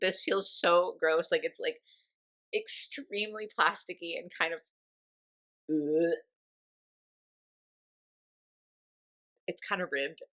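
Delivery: tearful, in tears. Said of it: "I'm genuinely in tears over this".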